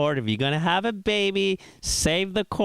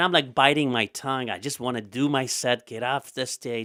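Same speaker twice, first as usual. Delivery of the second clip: plain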